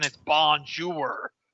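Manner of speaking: bonjour, thickly Americanized, very American accent on bonjour. Explaining how Americans say French words, saying bonjour very American. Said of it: "if someone says it very American".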